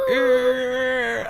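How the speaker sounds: high screeching squeal like a scraping noise. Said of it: "make it, like, screech really loud and be like".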